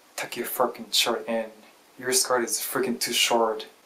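ordinary delivery

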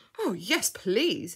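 eager, thrilled tone. Asked whether he would like to be adopted, he accepts excitedly. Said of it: "said Freddy excitedly".

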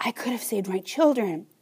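whispering. A woman speaking to Ma breaks off and whispers about her children. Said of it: "she whispers".

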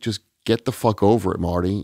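ordinary talk, nothing marked

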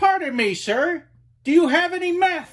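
accent from Florida. The speaker does an impression of a Floridian ordering at Chick-fil-A. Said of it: "I'll do my best Floridian ordering Chick-fil-A impression".

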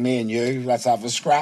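normal talking voice

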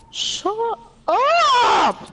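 loud yelling.

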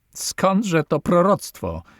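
high, laughing, said through a laugh. A man answers the captain's warning, laughing. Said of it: "zaśmiał się Fąk".

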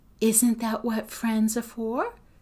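ordinary delivery

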